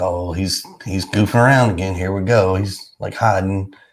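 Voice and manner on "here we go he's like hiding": normal talking voice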